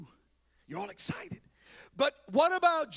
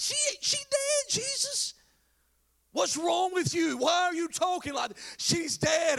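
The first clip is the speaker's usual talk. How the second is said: angry, mad, pitched-up voices; 7 semitones higher than usual. Retelling how the mourners answered Jesus: imitating angry mourners. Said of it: "They start getting mad".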